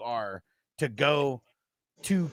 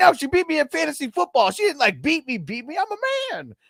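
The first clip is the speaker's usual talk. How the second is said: super high-pitched, loud, squeaking, protesting voice; 14 semitones higher, 7 dB louder than usual. Retelling a man answering the cops, imitating Kevin's high voice. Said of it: "his voice got all like super fucking high".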